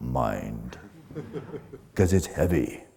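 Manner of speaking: deliberately deepened, very low, hushed, drawn-out voice. Speaker lecturing on the mind, switching to a deeper voice. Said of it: "I should speak in a deeper voice now".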